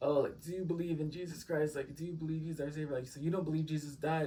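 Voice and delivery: insistent, pressing tone. Retelling the driver's questions about belief in jesus: imitating the driver. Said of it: "how does he even say it, guys?".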